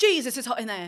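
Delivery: very loud, put-on, near-Scottish accent. Imitating a Bake Off contestant opening the oven: borderline Scottish accent. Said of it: "borderline, like, Scottish accent".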